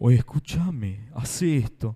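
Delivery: put-on deep voice, very low, very slow, booming. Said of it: "no habla con una voz gruesa".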